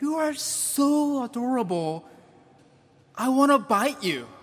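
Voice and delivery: bright, doting, cheerful coo. A preacher recalls hugging his small children, retelling a cheerful coo. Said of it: "in the most cheerful tone".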